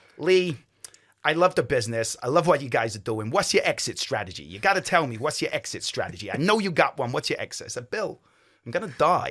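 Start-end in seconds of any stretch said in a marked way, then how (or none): 0.2-7.7 heavy, exaggerated New York accent. Retelling a private equity man questioning the speaker, in a strong New York accent. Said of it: "I'm going to do the accent because he had a really strong accent".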